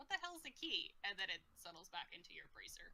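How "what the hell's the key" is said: high voice of a talking lock. Voicing a living lock that looks at the player: voicing a living lock. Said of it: "it kinda looks at you like".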